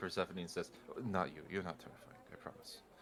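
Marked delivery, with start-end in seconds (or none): 1.1-2.8 hushed, very quiet whisper. Voicing a character who whispers aside to Persephone: whispering. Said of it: "he whispers over to".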